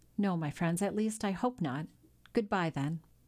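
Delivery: plain reading voice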